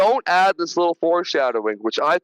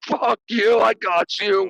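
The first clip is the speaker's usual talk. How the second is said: slow, drawn-out, yelled taunting; 4 semitones higher than usual. Recapping a film scene, imitating a character's yelled taunts at the thing. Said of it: "he's literally yelling like the best taunts".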